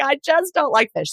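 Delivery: high, crying, teary, tearful voice. Retelling crying at the dinner table over a fish meal: imitating own past crying. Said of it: "I'm just crying".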